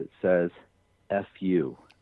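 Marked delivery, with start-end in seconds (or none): 1.1-1.7 put-on demonic male voice, quieter. Retelling a voice heard on a recording: imitating a male demonic-like voice. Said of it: "in this male, demonic-like voice".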